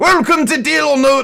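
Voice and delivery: failed West Country accent, pitched very high. A quiz host opening the quiz round, in a bad West Country accent. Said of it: "I was trying to do my West Country accent".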